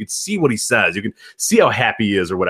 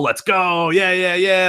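put-on old-school eighties hype yell, high-pitched and drawn out; 8 semitones higher than usual. Retelling a babyface routine before a silent crowd: imitating someone screaming. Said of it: "he's just screaming at him".

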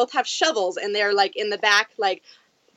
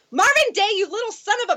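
put-on scream, pitched higher; 12 semitones higher than usual. Retelling bursting onto a balcony at one in the morning: retelling a scream. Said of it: "and just scream".

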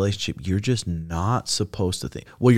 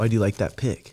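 put-on upset, confronting, accusing voice. Acting out a girlfriend who comes at her partner over a liked pic: imitating an upset, confronting girlfriend. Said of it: "she comes at you".

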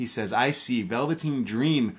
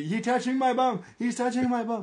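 very high, shrill, frantic yell; 12 semitones higher than usual. Retelling Bo Dallas yelling to security: imitating Bo Dallas yelling. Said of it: "Bo Dallas yelling to security".

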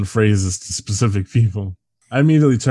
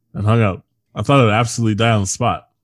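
usual speaking voice

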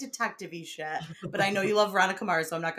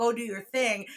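plain

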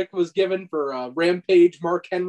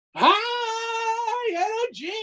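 very high, shrill, stretched-out all-out scream. Retelling being woken at work by a wrestling show: Koko B. Ware screaming "High energy". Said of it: "He would scream it, like, at the top of his lungs".

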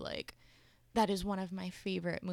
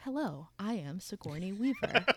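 put-on intercom announcer voice. Retelling an intercom announcement in Finding Dory: Sigourney Weaver impression. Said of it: "Sigourney Weaver's voice is over the intercom system".

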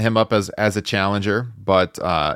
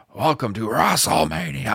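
loud announcer-style yell, much higher pitch; 6 semitones higher than usual. Recalling how Vince would yell in the 80s and 90s, Vince yelling impression. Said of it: "Vince would yell".

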